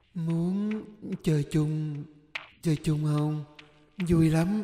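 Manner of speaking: slow, hoarse, raspy, ghostly eerie whisper. A narrator voices a creature whispering close to the narrator's ear, in a slow, hoarse ghostly whisper. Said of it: "thì thào với giọng khàn đặc, từ từ đầy ma quái".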